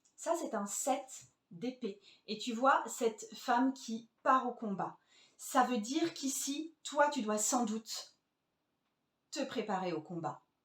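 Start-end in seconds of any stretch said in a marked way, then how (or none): 5.4-10.4 sentence split by a pointed, deliberate pause. Reading a tarot card for a consultant: deliberate pause mid-sentence. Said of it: "Tu as senti cette pause qui refocusait l'éventuel consultant dans le message".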